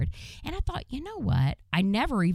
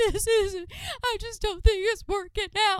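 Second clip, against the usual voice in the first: put-on male bawling, mock sobbing, much higher, slower. Speaker acts out a man talking to them with tears streaming: imitating a man bawling. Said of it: "Just tears streaming down his face".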